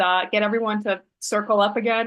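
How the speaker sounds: ordinary talk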